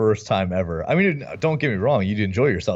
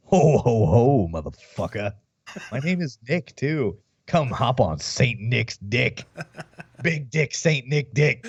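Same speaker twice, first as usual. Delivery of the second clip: put-on demon voice, jolly character gone wrong; 2 semitones higher than usual. A speaker does a crude Santa bit, in a Krampus voice. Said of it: "You sound like Krampus".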